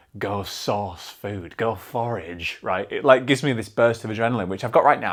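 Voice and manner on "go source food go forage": low, slow, soft primal urging voice. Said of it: "my body being like".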